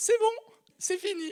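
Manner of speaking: tiny, very high, loud woman's voice. Retelling how a spirit spoke through someone: imitating a small woman's voice. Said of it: "une petite voix de femme qui dit".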